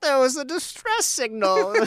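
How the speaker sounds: put-on high elderly gnome lady voice. Player picturing an old gnome lady's reaction during a game, old gnome lady voice. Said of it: "the image of like an old like gnome lady being like".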